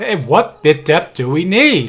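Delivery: booming, very loud, slow call. Testing voice levels for a recording, demonstrating a loud voice. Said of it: "now I'm going to do a loud voice".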